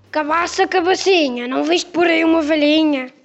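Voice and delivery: booming voice like thunder. Narrator voicing the beast questioning the rolling gourd, in a thunderous voice. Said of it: "com voz de trovão".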